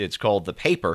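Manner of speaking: ordinary talk, nothing marked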